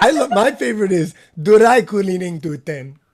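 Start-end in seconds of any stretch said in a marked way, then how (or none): 1.4-2.9 put-on Japanese accent on English words, louder. Giving a favorite example word: imitating Japanese-accented English. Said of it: "which is dry cleaners".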